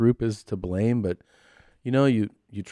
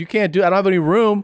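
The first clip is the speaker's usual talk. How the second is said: put-on, very loud, shrill, indignant complaining tone; 9 semitones higher, 6 dB louder than usual. Retelling a complaint from a woman seated behind: imitating a woman getting loud. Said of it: "she got real loud about it".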